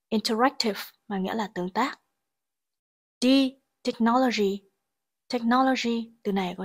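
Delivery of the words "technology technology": technology with stress on the second syllable. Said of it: "trọng âm rơi vào âm tiết thứ hai".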